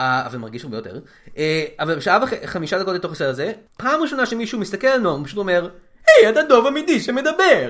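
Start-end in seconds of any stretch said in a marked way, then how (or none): 6.1-7.7 very loud, very high, swooping put-on Italian accent. Retelling a line a movie character says, in an italian accent. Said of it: "אבל אתה ברור שעשית מבטא איטלקי".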